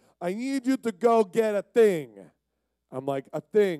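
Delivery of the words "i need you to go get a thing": put-on high-pitched, slow speech in an Italian accent. Speaker retells his landlord asking him to fetch a thing; Mario-like Italian accent. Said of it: "he's like super Italian".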